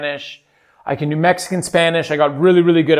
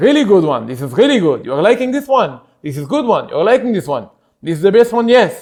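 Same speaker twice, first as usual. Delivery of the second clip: Israeli accent with looping short phrases; 4 semitones higher, 5 dB louder than usual. Demonstrating a practiced accent and its trigger word: Israeli accent. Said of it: "the trigger word for the Israeli accent".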